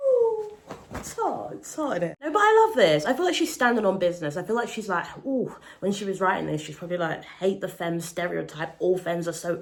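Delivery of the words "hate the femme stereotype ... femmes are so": ordinary delivery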